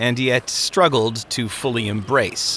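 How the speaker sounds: plain reading voice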